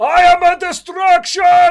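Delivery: screaming at top of lungs. A player acts out his character's charge in the game, screaming at top of lungs. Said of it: "literally screaming".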